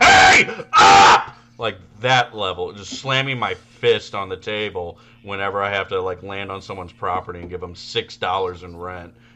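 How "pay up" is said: all-out, very loud, top-of-lungs screaming. Speaker recalls screaming at Emma over rent, retelling a scream. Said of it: "I am screaming at the top of my lungs".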